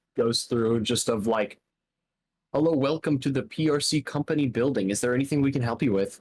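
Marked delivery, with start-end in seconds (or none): 2.5-6.2 simple, robotic automated voice. Voicing the front desk's simple automated response: automated response voice. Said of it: "just a simple automated response".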